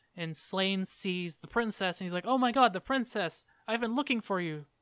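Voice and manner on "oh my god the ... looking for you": mock glad, happy cry of sudden relief. Retelling a scene, acting out Sláine finding the princess: imitating Sláine sounding relieved and happy. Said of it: "he sounds relieved, and he's happy".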